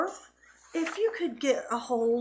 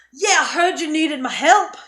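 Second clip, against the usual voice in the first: very loud, high, put-on Scottish dwarf voice; 6 semitones higher, 10 dB louder than usual. Voicing a female dwarf who stomps over, Heidi Axebeard Scottish accent. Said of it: "I cannot hold a Scottish accent".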